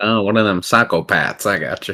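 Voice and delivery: put-on rural country-folk accent. Playing a character in a tabletop game, speaking in a country accent. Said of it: "You say something else in the country accent".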